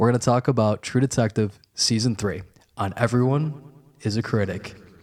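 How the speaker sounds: slow, deliberate, carefully spaced-out words. Announcing the episode topic, saying it slowly so his friend can repeat it, speaking slowly. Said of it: "and I'll say it slowly".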